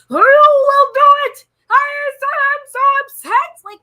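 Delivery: very loud, drawn-out, complaining hollering. Retelling what he said in a discussion: imitating someone yelling. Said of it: "why was he yelling so much".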